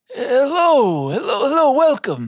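put-on high, very old little halfling voice. The narrator voices the person behind the counter greeting a player: super old halfling voice. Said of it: "it's like this short guy, halfling, super old".

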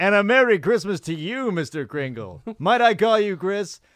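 booming, high, very loud announcer voice. Acting out Bill greeting Santa as Mr. Kringle, in Bill's announcer voice. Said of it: "Announcer voice on".

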